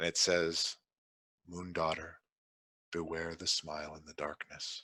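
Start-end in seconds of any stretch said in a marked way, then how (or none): 1.5-4.8 very soft, faint half-whisper. Voicing Selene half-whispering a warning to a player: half-whispering as Selene. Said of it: "Selene whispers to you".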